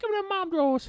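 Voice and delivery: very high put-on voice. Joking about what a man always says to a teenager, in a high-pitched put-on voice. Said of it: "That's high as I can go".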